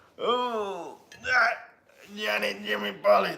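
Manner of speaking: straining, very high, slow, drawn-out oh. Speaker does an impression of their dad picking up the kids, imitating dad lifting heavy kids. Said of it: "That's my impression of my dad".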